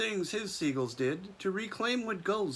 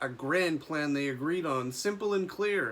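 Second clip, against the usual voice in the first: plain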